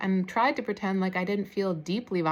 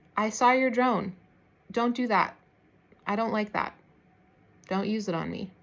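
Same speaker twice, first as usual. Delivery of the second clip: quiet, calm, low, composed, collected voice. Retelling words said through the window to a contractor with a drone, retelling a calm, low voice. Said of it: "I said in a calm, collected, low voice".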